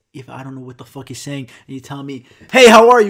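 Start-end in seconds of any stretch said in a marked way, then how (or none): 2.6-3.2 very loud, hostile-sounding, aggressive, acted out. Retelling the bank greeting: imitating an aggressive greeting. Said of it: "can't be aggressive with your tone".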